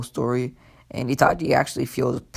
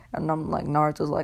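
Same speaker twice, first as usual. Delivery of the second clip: usual speaking voice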